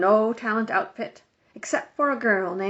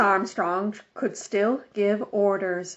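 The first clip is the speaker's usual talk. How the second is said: ordinary delivery, nothing marked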